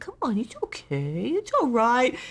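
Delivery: put-on very high, loud, swooping, cooing baby talk. Retelling coaxing a howling dog in the woods: imitating own baby talk to a dog. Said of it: "and I'm talking like this".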